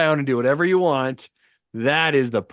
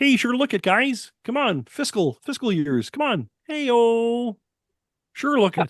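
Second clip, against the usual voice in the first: very high, cartoon frog puppet voice; 9 semitones higher than usual. Repeating a line heard on the podcast back to the hosts: Kermit the Frog voice. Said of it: "A little visit from Kermit the Frog there".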